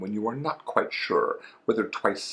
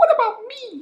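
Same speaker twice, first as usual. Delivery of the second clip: very high, loud, squeaky little voice; 8 dB louder than usual. Reading a story aloud, Piglet looks up and asks the narrator: Piglet's squeaky voice. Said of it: "said in his squeaky voice".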